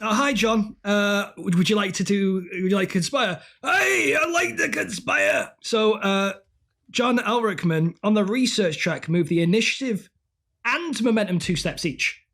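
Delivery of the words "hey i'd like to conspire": slow, high, laid-on put-on Scottish accent. Playing John Elrickman on a pretend phone call, in his put-on Scottish accent. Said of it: "I think boom, Scottish there".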